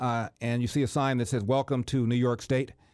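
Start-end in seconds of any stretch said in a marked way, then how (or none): none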